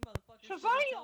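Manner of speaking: mock, very high-pitched, loud, angry, pissed-off rant. Imagining being in the car buyer's place, acting out an angry complaint. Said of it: "I'd have been pissed".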